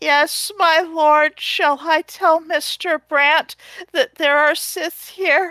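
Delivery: extremely quavery, small, high little voice. Voicing a character in a role-play game scene, extremely quavery little voice. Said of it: "an extremely quavery little voice says".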